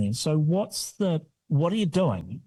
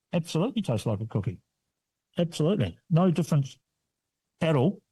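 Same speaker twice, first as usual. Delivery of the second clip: words muffled, talking through a full mouth. Taster tries an egg-free cookie, talking while eating. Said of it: "excuse me while I'm eating here".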